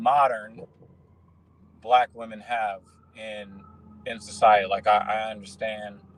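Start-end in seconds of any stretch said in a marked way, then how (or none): 0.0-0.6 stressing the word "modern". About to tell a story, first making a point clear, with stress on the word "modern". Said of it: "I want to stress the word modern".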